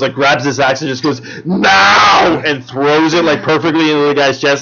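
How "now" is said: serious, drawn-out word, pitched up. Retelling a movie scene: Arnold Schwarzenegger impression. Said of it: "Arnold Schwarzenegger seriously just goes".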